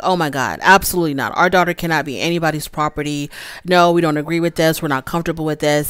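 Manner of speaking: ordinary talk, nothing marked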